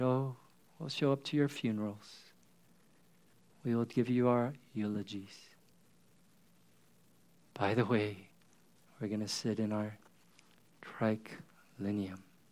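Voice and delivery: acted smug, self-satisfied, superior low voice. Retelling what the church said to its starving, dying people: mock-smug church voice. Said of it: "the church just smugly said".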